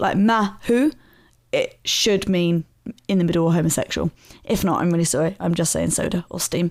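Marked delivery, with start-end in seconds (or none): 0.2-0.9 mahu said with equal stress on both syllables. Explaining how the word changes meaning with inflection, stress both syllables of mahu. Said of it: "if you put emphasis on both syllables".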